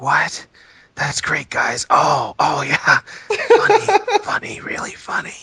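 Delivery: hushed, high whisper, slow and drawn out. Imitating a past cast member reacting during the show: imitating Max whispering. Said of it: "it's him whispering".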